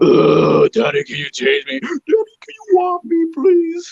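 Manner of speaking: put-on very high, swooping, squeaky, sing-song cartoon kid voice. Discussing Kevin's voice roles, imitating Cleveland Brown Junior in a funny voice. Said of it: "It's a funny ass voice".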